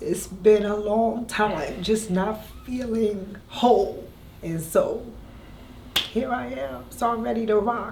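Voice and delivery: high voice, fighting to hold back tears. Thanking someone on air, the speaker talks while holding back tears. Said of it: "I'm trying not to cry".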